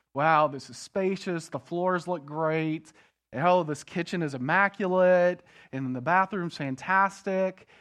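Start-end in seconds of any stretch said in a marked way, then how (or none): none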